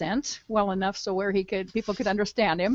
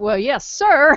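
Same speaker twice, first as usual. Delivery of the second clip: put-on very loud, high, thick Georgia accent; 6 semitones higher, 11 dB louder than usual. Retelling how he answered the other man, in a thick georgia accent. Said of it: "he had this thick Georgia accent".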